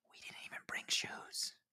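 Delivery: hushed whisper under the breath. Retelling a quiet aside to a partner at a group dinner: retelling a whisper. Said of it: "I whispered".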